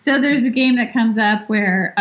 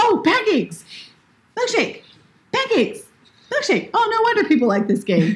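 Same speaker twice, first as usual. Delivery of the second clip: put-on super excited cartoon voice, higher; 11 semitones higher than usual. Retelling a scene where the character pops up on an iPad, imitating a super excited Ralph. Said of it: "super excited".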